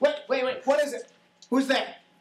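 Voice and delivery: high, loud nasal character voice, calling out. The narrator voices someone suddenly heard calling out, high-pitched nasal voice. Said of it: "a relatively high pitched nasally voice saying".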